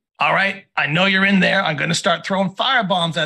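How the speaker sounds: loud, high-pitched goblin calling out. Game master voicing a goblin out front, goblin calling out. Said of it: "the goblin out front calling again".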